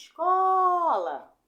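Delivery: escola, middle syllable co stretched and stressed. Testing which syllable of a word is strongest: drawn-out stress on co in escola. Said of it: "eu fiquei mais tempo falando ó".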